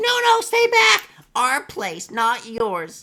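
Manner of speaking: very high, very loud, shrill, swooping goblin screech. Voicing goblins warning the players to stay back: goblin voice. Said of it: "you hear these goblins".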